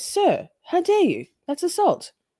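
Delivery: high, swooping, goofy, silly dog voice. Streamer speaking for their dog, in a silly dog voice. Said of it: "Very silly voice".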